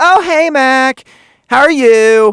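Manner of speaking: gushing fake happiness, very high, loud, drawn-out. Retelling how a man greets the speaker, imitating a mock super-happy high voice. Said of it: "high pitched, super happy fucking voice".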